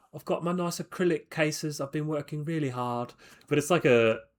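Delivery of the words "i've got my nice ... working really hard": put-on English accent with an Australian tinge. Imitating a friend's on-camera intro: imitating Tris's English accent. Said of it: "he's got a nice English accent".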